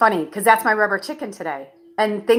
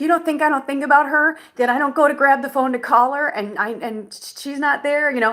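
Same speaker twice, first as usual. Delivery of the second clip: mock crying, high, tearful, dramatic and emotional; 5 semitones higher than usual. Retelling a dramatic stage monologue while crying: reenacting an emotional, tearful monologue. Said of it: "starting to get emotional where I'm like".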